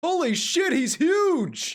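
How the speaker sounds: shrieking, booming, very loud, high yell, stretched out. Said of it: "Why are you yelling?".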